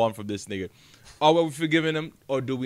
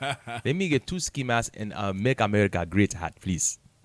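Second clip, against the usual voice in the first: put-on royal prince accent; 5 semitones lower than usual. Acting out buying ski masks at a beauty supply store: Prince Hakeem accent. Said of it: "With an accent".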